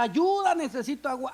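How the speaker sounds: mock, high-pitched crying out. Acting out a dried-up deer calling for water: deer shouting for help. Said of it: "y comienza a gritar".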